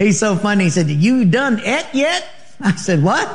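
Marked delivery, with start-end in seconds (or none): 0.9-2.3 put-on slow, high-pitched rural country accent. Retelling what a ranch cook in Montana said to them, redneck accent. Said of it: "they talk with an accent like this".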